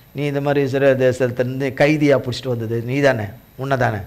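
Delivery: plain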